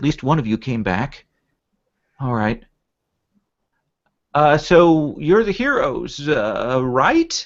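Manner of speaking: slow delivery, pausing on each "uh". Voicing a raccoon character looking down at a fox: Natty Raccoon voice. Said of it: "he looks down again at the fox and he goes".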